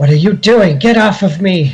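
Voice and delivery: put-on shrill, very high, childlike yell. Game master voicing a beholder as a player's weapon strikes it, shouting in a childlike voice. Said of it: "shouting in her in her less calm childlike voice".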